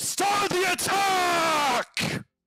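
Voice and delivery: big orc monster voice, yelling and bellowing. Voicing a big orc with a warhammer ordering an attack: orc yelling an order. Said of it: "who just yells".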